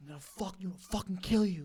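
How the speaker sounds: high, screaming voice. Retelling a man following them for a block: imitating someone screaming threats. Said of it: "screaming at the back of my head".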